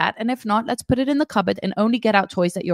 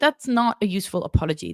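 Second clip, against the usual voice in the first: ordinary talk, nothing marked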